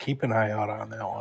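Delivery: soft half-whisper, kept low. Speaking in character to the cleric friend while walking out: half-whispering. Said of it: "in a whisper".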